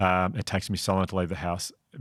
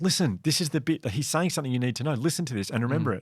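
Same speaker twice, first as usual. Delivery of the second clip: urgent, insistent yell, high-pitched; 7 semitones higher than usual. Retelling yelling at own brain during a boring class: retelling a yell. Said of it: "I'd be yelling at my brain going".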